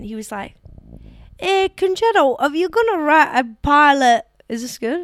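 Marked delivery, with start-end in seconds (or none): 1.4-5.1 put-on lively, raised, high-pitched Scottish comic's accent. Quoting a fellow comic from Scotland, imitating Connor Burns's Scottish accent. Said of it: "He said in that accent".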